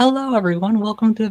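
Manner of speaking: shrill, very high, loud narrator voice. Showing how narrating Spooky Saturday would sound, in a high-pitched voice. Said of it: "I can't have my high pitched voice narrating".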